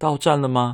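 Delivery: annoyed grumble.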